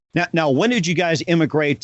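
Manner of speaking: ordinary talk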